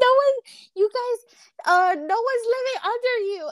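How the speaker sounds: high, loud mock yelling.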